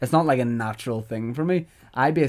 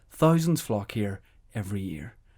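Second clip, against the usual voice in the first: lilting ad-voiceover rise, falling on "year". Showing how every voiceover sentence rose, then came down at the end. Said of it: "it rose and it went down at the end".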